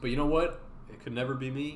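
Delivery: ordinary talk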